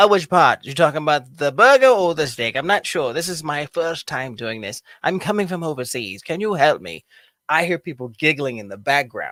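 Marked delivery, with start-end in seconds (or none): 0.1-7.0 put-on posh, upper-class, aristocratic British accent. Retelling ordering food while claiming to be from overseas; aristocratic british voice. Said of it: "aristocratic and extremely interesting um British voice".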